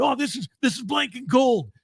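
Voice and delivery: put-on New York accent, pitched way up. Retelling what the tape editor said about the tape: imitating Rob's New York accent. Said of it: "New York accent".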